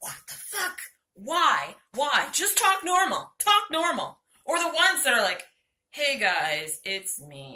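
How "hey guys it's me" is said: energy-less drone, very low and slow. Mocking online ads, the speaker imitates a presenter with no energy whatsoever. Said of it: "And there's no energy whatsoever".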